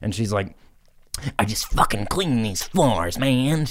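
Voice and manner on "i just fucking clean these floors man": agitated, worked-up tweaker voice. Retelling what a woman mopping bathroom floors said, tweaker voice. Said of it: "She's got that like tweaker voice".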